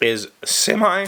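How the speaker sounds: voice breaking mid-word, cracking up high. Host describing a facet of their personality on the show: voice cracks. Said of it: "My voice just cracked".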